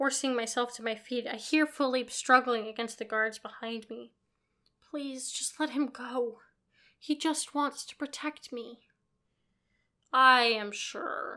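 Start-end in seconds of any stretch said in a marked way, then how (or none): 10.1-11.4 dismissive, full of scorn. A man answers the narrator's plea to let someone go, scornful. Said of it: "Damien says scornfully".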